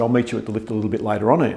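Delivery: ordinary talk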